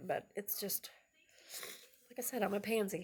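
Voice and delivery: tearful. Speaker insisting everything is fine, crying. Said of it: "I don't even know why I'm crying".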